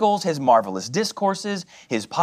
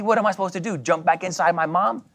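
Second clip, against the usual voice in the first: plain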